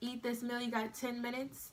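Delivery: ordinary delivery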